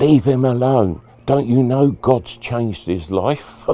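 very loud booming shout. Retelling how dealers in court stood up and shouted: imitating people shouting. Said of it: "they all stood up and they shouted out".

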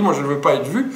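ordinary talk, nothing marked

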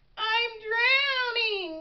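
high, panicked cry of alarm. Narrator reads a frog's reply to his mother, crying out. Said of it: "cried Froggy".

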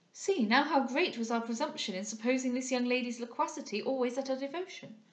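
ordinary delivery

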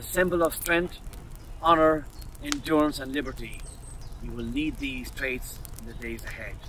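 plain

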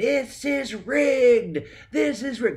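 very high, shrill, loud shrieking scream. Recounting hearing another band win the Dove Award, retelling own screaming. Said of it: "I start screaming".

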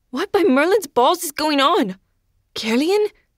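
high, anxious, worried and frightened call. Narrator reading Joe's line as he rushes up the stairs, worried and scared. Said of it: "Joe sounded worried and scared".

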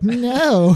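mock yelped "no". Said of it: "You're like".

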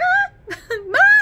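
high, loud, delighted squeal.

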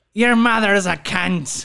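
loud, laid-on fake Irish accent. Trying out accents with others in conversation, in an Irish accent. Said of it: "that was more Irish".

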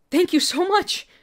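breathless, very high. Reading a story aloud, thanking a girl while dashing off: breathless. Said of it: "you said breathlessly".

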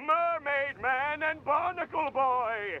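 slight villainous cartoon voice. While looking for two heroes with an officer, a speaker calls out in a Plankton voice. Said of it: "Bit of a plankton voice came out there".

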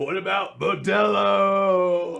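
very slow, drawn-out, crowd-pumping announcer hype call. Retelling how a derby announcer worked the crowd: imitating a hype announcer. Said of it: "And then he'd be like".

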